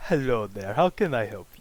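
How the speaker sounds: put-on, loud, very manly Russian accent. Playing a character who greets a visitor, in a manly russian accent. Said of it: "very manly accent, but it's the best I could do for, you know, Russian".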